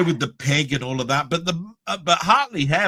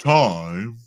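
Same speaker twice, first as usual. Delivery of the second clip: very low, deep voice, "time" drawn out; 7 semitones lower than usual. Recalling a segment with animated clocks, deep voice on time. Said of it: "a deep voice went time like this".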